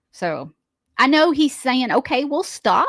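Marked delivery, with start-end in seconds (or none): 1.9-2.9 play-acted grudging, passive-aggressive agreement. Retelling his reply to a bathroom-break request: imitating passive-aggressive reply. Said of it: "He's very passive aggressive".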